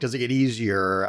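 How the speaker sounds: ordinary talk, nothing marked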